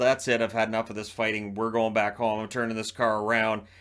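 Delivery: plain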